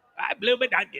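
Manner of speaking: bad put-on Australian accent. Showing the others a terrible aussie accent. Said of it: "I have a terrible Aussie accent".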